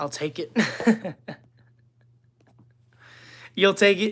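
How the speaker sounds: put-on Australian accent, a best attempt. Chatting with someone about where they live, australian accent. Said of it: "That's my best Australian accent I've got".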